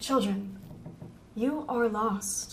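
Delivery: silky, liquid-smooth, velvety tone. A narrator voices a speaker addressing the lost children, in a smooth velvety voice. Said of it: "The voice is smooth like liquid velvet".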